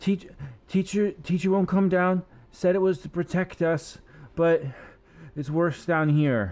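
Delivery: desperate pleading tone. Game master voicing a struggling kid who catches the players' attention: desperate. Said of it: "seemingly desperate".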